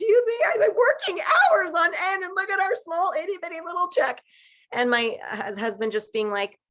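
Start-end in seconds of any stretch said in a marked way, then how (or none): 0.0-4.2 play-acted crying, very high and tearful. Retelling complaining to her husband about a small check: retelling own past crying. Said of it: "me just crying".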